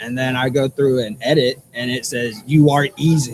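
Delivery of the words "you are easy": sinister, wicked, hissing spirit voice. Retelling what a spirit box radio said: imitating a wicked hissing voice. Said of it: "in a wicked, hissing voice".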